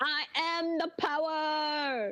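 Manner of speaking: very slow proclamation tone, power drawn out. Comparing a character's morning boost to He-Man: He-Man voice. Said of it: "He-Man and, like, the power of Grayskull".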